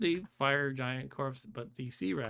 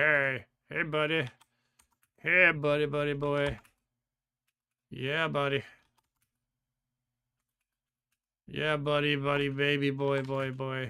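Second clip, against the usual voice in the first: voice of many fire giants, slow and drawn out; 4 dB louder than usual. Voicing a horde of fire giants approaching in the game: fire giants voice. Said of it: "So they're like".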